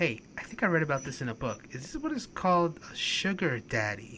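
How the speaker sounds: hushed, whispered voice. Retelling what the speaker quickly whispered to someone: retelling a whisper. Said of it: "I whisper to Honey real quick".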